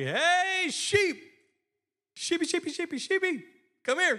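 very high, drawn-out calling yell. Retelling people at a fence told by a shepherd to call the sheep, retelling someone yelling. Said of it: "yell out to him".

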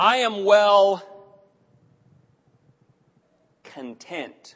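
very slow, deliberate delivery. Bringing back a phrase listeners haven't heard in years: said nice and slowly. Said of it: "I'm going to say it nice and slowly so I don't lose anyone".

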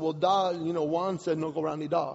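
ordinary delivery

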